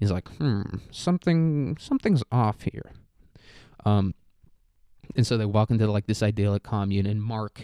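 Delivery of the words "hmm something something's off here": very dorky, nerdy voice, pitched up high. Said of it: "he has, like, the whitest voice imaginable".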